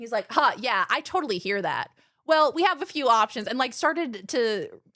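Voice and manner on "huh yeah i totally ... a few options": speaking in AI chatbot assistant style. Retelling a video where someone mimics AI replies: imitating AI chatbot speech. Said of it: "speak in the exact same way that A I talks".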